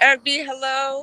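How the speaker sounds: loud, high-pitched shout. Greeting someone with the microphone turned all the way up, yelling. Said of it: "I don't know why I'm always yelling".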